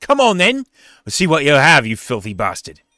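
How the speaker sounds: loud, contemptuous, sneering jeering tone. Voicing a warrior who charges an orc: sneering. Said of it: "he kinda sneers at the orc and he says".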